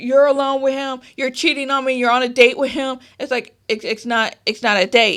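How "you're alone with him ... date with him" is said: acted-out heated, jealous, possessive accusing tone. Retelling how a boyfriend on the phone yelled at her: imitating someone yelling. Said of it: "he's yelling at me".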